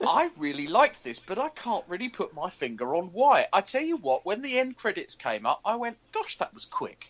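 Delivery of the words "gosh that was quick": soft, breathy, mildly startled surprised voice. Speaker recalls his reaction when the end credits came up: retelling a surprised reaction. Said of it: "sense in that sort of surprised voice like that?".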